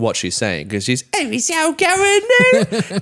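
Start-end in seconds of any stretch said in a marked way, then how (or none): 1.2-3.0 put-on Cockney accent, very high, very slow, drawn out. Imitating the voice an American can't understand: Cockney accent. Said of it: "a Cockney".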